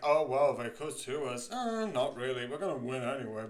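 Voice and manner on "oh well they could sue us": put-on sarcastic tone. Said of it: "pointing how sarcastic it is".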